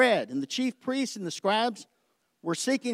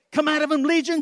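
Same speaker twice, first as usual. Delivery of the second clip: mock loud, full-throated, high-pitched raised yell; 6 semitones higher, 5 dB louder than usual. Retelling shouting at a printer that would not print: retelling own shouting. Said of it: "I'm shouting".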